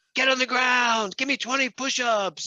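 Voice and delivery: mock, shrill, very high screaming. Retelling a trainer's order to people in a park: imitating a trainer screaming. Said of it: "screaming at them".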